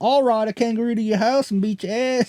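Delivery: poorly done put-on Australian accent. Joking about australian slang, a speaker tries a bad australian accent. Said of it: "we're not good at accents".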